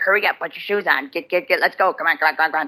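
rushed, impatient, hurrying-along tone. Retelling how the grandparents always hurry the girl: imitating grandparents yelling impatiently. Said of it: "yell and scream at each other ... always tell her".

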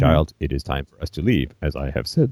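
dead level, flat, low delivery. Speaking to a child, in an emotionless Vulcan voice. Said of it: "stifled, emotionless Vulcan".

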